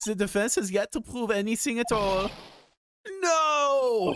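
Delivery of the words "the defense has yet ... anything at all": put-on weak, shaky German accent, pitched up. Speaker reading a line as von Karma, in a sad German accent. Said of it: "So this is my sad attempt at a German accent".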